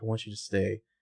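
hushed voice. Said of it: "she's whispering".

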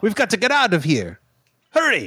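high-pitched voice with swooping pitch. Acting out the Botany Bay moment: Chekov impression. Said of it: "That was a very good Chekhov impersonation".

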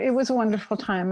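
plain

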